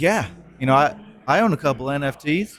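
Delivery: bad, clumsy, put-on Texan accent. Quoting Neil from Peterson Farms, in a bad Texan accent. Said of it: "Is that a good Texan accent?".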